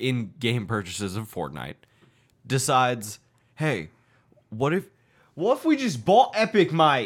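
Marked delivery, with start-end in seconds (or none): 3.5-7.1 put-on Australian accent. Voicing Google deciding to just buy Epic, in a put-on Australian accent. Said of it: "Why are we doing an Australian accent?".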